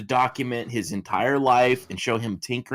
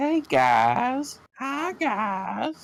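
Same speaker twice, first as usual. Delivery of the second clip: squeaky very high voice, swooping, slow, drawn-out sing-song; 12 semitones higher than usual. Slipping into an impression while joking about avoiding Chris Chan videos: Chris Chan voice. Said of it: "then I'll start to do the voice".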